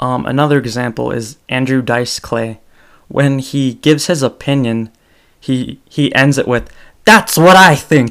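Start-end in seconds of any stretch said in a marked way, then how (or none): 7.0-8.1 very loud, high-pitched shout. Show how Andrew Dice Clay ends it when he gives his opinion, yelling like Andrew Dice Clay. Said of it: "Sorry for yelling".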